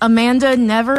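plain

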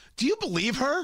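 high, rising, incredulous tone.

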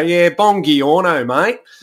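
put-on Australian accent, drawn right out, slow and high. Recalling hearing Australians while on holiday in Italy, imitating them in an Aussie accent. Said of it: "hear the Aussie accent ... Just hearing it go".

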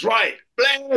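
military corporal call-out.

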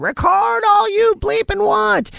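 put-on high-pitched, slow drunken yell.

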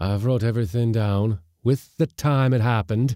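savage satisfaction, loud and high. The other man speaks to the groaning, silent mate, with savage satisfaction. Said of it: "in a voice of savage satisfaction".

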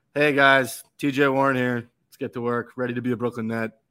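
put-on joyless, sad, unenthusiastic delivery. Retelling a player's welcome video: imitating a sad, unenthusiastic greeting. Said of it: "sad, unenthusiastic".

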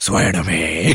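deep, low vigilante-hero voice.

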